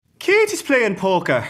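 cartoonish Irish accent, very high, very loud. Asked whether either of them can do one, a speaker tries an Irish accent. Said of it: "can either of you do an Irish accent? ... Let me try".

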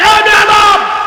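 loud, high, roaring tone.

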